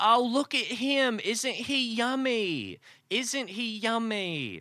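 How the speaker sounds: very high, sweet, fawning Southern woman's voice. Retelling a woman pinching his cheeks, imitating a woman's accent. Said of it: "based on the accent that you've presented".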